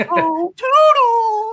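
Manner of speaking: squeaky, very high-pitched voice. Showing off the only voice they can do, in Mickey Mouse voice. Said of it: "I'm actually genuinely impressed".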